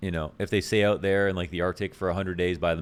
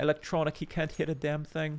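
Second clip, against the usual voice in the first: very high-pitched British sports commentator voice; 9 semitones higher, 5 dB quieter than usual. Speaker attempts the shared voice of all British commentators: British commentator impression. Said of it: "I tried to do the common denominator voice".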